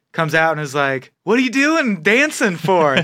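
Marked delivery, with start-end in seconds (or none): 1.2-3.0 put-on drunk voice, higher. Retelling what a story character says: imitating drunk Adolf. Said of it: "all drunk".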